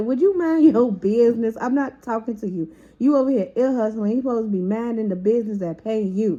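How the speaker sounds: play-acted, mean, harsh, nasty tone. Retelling how someone snapped at another listener: imitating someone talking mean. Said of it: "mean to her".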